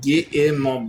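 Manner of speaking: put-on Scottish accent. Quoting a line after hearing someone sounds like Fat Bastard: Fat Bastard voice. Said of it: "Sound like fat bastard".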